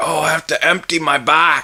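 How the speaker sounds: put-on Norwegian accent. Telling others where a gross phrase came from, imitating a Norwegian friend. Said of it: "It's Norwegian friend of mine. He's like".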